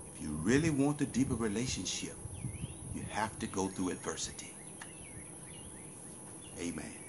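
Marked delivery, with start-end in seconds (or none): 0.1-4.5 soft, hushed half-whispering tone. Speaker tells listeners he will share this next point in a half-whisper: half-whispering. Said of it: "Let me share this with you in a whispering tone".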